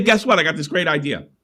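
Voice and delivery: ordinary talk, nothing marked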